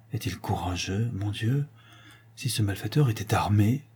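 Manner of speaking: spoken aside. Madame Lambert, after Monsieur de Luxeuil speaks, says an aside. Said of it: "à part".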